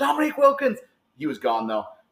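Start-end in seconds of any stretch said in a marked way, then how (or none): 0.0-0.8 shrill, very high, sudden blurted shout. Retelling calling out to someone who walked past: imitating own past yell. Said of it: "and I just yelled".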